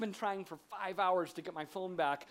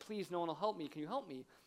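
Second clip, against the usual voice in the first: quieter, put-on tearful crying woman's voice; 5 dB quieter than usual. Retelling how a lady came up asking for help, imitating a crying woman. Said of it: "and she's crying".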